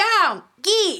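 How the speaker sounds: acted scream. Recounting chasing something away from the window: retelling a scream. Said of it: "I was screaming".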